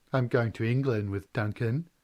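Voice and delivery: ordinary talk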